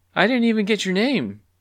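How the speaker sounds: very high, shrill yell. Narrator reads a character running after someone who is leaving: yelling. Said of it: "yelled clucky".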